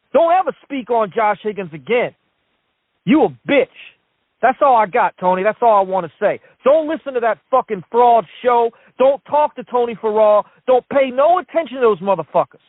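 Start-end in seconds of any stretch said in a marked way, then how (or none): 0.1-3.6 upset, furious, angry ranting. A caller telling off a critic of Josh Higgins; upset, angry rant. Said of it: "I understand why he was upset".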